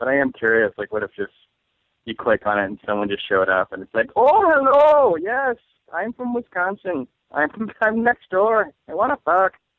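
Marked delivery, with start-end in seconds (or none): 4.2-9.5 clumsy, bad fake Irish accent, very high, slow. Imagining a stranger from next door showing up after clicking a link: bad Irish accent. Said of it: "I guess my Wisconsin accent is Irish".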